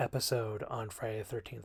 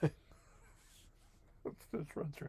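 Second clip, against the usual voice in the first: talking through laughter, higher and quieter; 5 semitones higher, 10 dB quieter than usual. Starting a movie review recap, laughing while talking. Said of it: "I'm laughing because that's silly".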